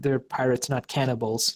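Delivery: ordinary talk, nothing marked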